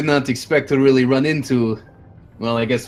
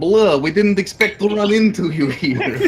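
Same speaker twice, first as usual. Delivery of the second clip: bad put-on vampire accent, high and slow; 7 semitones higher than usual. Voicing a bat creature meeting the players: horrible vampire accent. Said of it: "Dash trying to do a horrible vampire accent".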